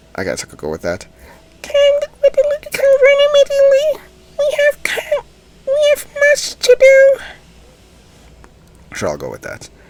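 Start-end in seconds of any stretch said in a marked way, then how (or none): 1.6-7.2 witch voice, very high and very loud. Trying out a voice for a story character: witch voice. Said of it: "a witch type of voice".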